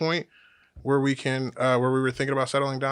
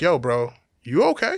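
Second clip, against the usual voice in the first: slow, amused, put-on voice through laughter; 3 semitones higher, 5 dB louder than usual. Retelling seeing a man with scratches and ripped clothes, retelling a laughing question. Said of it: "and I'm laughing".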